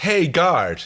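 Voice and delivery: mock high yell, calling out loud. Acting out a scene where characters call to a guard: yelling at a guard. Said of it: "yell into the microphone".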